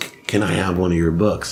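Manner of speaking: ordinary talk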